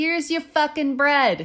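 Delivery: clumsy put-on Brooklyn accent. Playing someone handing over bread with no chit-chat, bad Brooklyn accent. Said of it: "Is that your best Brooklyn accent?".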